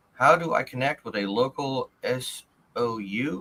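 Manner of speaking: very slow, careful, word-by-word delivery. A speaker who says they are dyslexic asks a question, speaking very slowly. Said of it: "I'm talking very slowly".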